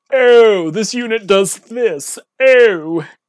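rich, snooty, snobby moneyed tone. Explaining how internet voices get done, demonstrating a rich snobby voice. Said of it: "this rich and snobby".

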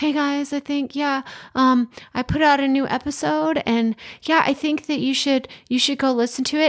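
put-on timid, shy kid's stage whisper. Imitating someone announcing a new episode without confidence: imitating a timid kid half-whispering. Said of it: "that kid that's, like, sitting in the corner, like, whispering".

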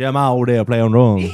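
put-on Louisiana accent. Redoing a line after being asked for a louisiana accent, louisiana accent. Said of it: "more your Louisiana accent".

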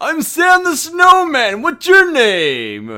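called out big, one word stretched out. Speaker retelling meeting a talking snowman, old Sam the Snowman voice. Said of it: "He's like an old snowman".

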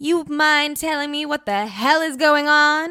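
very suspicious, deeply distrustful tone. In the interrogation area, Jane questions the agent: very suspicious. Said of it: "Jane asked very suspiciously".

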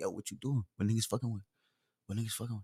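very low, quiet muttering under the breath. Imitating how he talks when he mumbles, in a low mumble. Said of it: "And he be mumbling. He be like".

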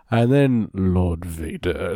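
theatrical, slow, menacing voice dropped into low chest register. Describing how a performer delivers a line in an episode, imitating a low chest voice. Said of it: "gets down in his chest with his voice".

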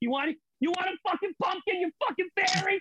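very high-pitched comic delivery, goes way up high. Quoting a favorite comedian's bit to another speaker: Bill Burr impression. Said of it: "You sound just like him".

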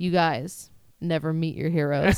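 put-on serious, sad voice. Retelling what a disappointed friend said walking away: imitating Mac's dead-serious, sad tone. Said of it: "in the most serious face, like a child who was just told that Santa isn't real".

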